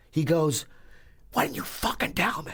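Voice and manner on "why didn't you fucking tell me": put-on, squeaky, pitched-up screaming outcry. Retelling a doorman's angry reaction: imitating someone screaming. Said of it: "he starts screaming at me".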